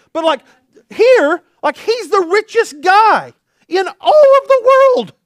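thrilled, rising voice breaking as it climbs. Speaker telling listeners about the richest man in the world, excited, voice cracking. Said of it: "My voice just cracked".

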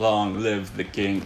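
mock emotionless dry reading. Complaining about how he said the line, imitating a dry, flat delivery. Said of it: "it was so dry the way he said it".

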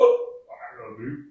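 croaky frog voice, very high, very loud, drawn-out. Narrating a story, voicing the frog on the mushroom: croaking frog voice. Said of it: "croaks, and goes".

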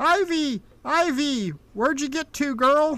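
high, loud hollering shout. As the listeners bring a child home, a voice calls for ivy: hollering out. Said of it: "you hear a voice hollering out".

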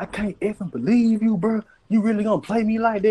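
mock shrill screaming, very high-pitched. Telling how a woman called and screamed at him, the speaker is retelling her screaming. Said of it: "just screaming at me like".

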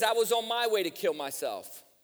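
ordinary talk, nothing marked

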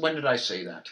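ordinary delivery

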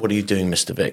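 stern, strict, terrifying tone. Imitating the strict choir master stopping the choir: imitating a strict choir master. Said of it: "the choir master was so strict".

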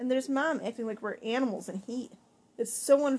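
ordinary delivery

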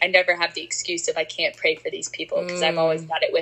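plain

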